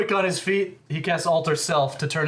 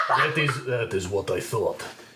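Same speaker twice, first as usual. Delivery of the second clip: put-on Russian accent; 7 semitones lower, 3 dB quieter than usual. Voicing Mister Shepard answering the guards: Mister Shepard Russian accent. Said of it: "This is pretty Russian".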